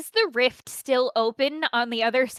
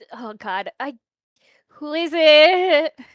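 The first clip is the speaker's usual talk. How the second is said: strained, effortful raised voice, drawn-out "it"; 3 semitones higher, 7 dB louder than usual. Hearing knocks at the door, she asks who it is: strained voice. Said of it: "she says it with that amount of strain to her voice".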